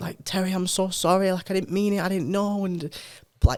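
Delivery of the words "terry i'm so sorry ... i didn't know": mock bursting out crying, high and tearful. Retelling a coworker's apology to a father: imitating someone crying. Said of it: "this woman just burst out crying and was like".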